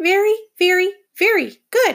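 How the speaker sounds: very high, squeaky little hamster voice. Reading a story aloud, the narrating hamster answers a woman, squeaking the line. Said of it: "I squeaked".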